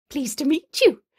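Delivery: polite little chirrup. A woman greets a newly arrived man, politely trying to fill the silence, chirruping. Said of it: "Madeline chirruped".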